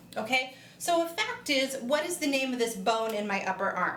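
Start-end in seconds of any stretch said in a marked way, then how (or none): none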